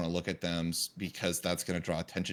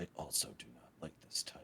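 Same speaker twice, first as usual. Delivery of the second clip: hushed, whispered mutter; 5 semitones lower, 13 dB quieter than usual. Voicing a character reacting to a tiger: muttering under breath. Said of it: "Bane just mutters to himself under his breath".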